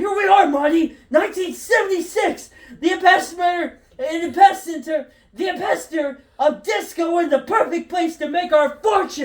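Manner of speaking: elated, high, excited, bursting with thrill. Reading a scene aloud where Doc Brown arrives: elated Doc Brown voice. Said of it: "Doc Brown, el-, el-, elated".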